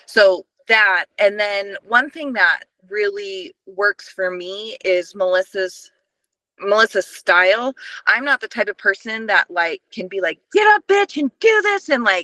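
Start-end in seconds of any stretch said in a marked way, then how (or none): 10.6-11.9 very high-pitched, intense screaming. Describing a motivating style that does not work: imitating someone screaming orders. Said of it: "screaming at me, like, that intense".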